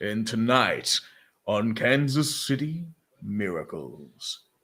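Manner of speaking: very slow nature documentary narrator voice. Someone asks you to use your documentary voice: documentary narrator voice. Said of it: "talk in your documentary voice".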